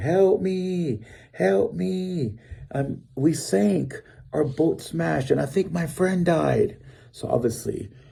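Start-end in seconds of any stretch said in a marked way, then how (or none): 0.0-6.8 acted, long, high, drawn-out, carrying yells. Retelling reaching the riverbank after the boat sank: retelling a yell for help. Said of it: "I'm yelling".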